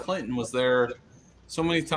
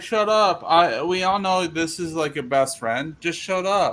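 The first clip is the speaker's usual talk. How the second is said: put-on British accent, higher pitch; 5 semitones higher, 3 dB louder than usual. Retelling what he said to her: imitating a British accent. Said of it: "in his, like, British accent".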